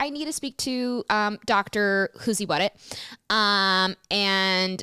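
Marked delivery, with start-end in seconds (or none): none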